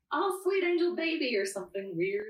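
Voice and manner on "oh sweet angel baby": loud, very high, stretched-out scream. Describing what they yell after finishing sessions, retelling a loud scream. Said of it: "I just like really loudly scream".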